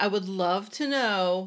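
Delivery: heavily sarcastic tone. Asking about a rival in a made-up award category: sarcastic. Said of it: "I'm saying this with sarcasm".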